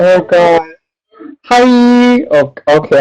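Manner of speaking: overwhelmed, starstruck, fumbling, very slow, drawn-out "hi". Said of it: "I'm just freaking out right now".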